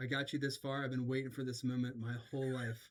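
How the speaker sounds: mock flat, expressionless tone. Acting out what to tell a lifter next time: put-on deadpan delivery. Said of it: "Next time I'm just gonna deadpan look at you".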